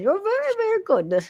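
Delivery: put-on very high-pitched old Irish woman voice. Repeating the line to Benno, old Irish woman voice. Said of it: "And like Irish".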